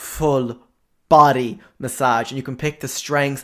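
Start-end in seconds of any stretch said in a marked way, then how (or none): 0.0-2.3 "full body massage" louder and slower after a pause. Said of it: "I mean".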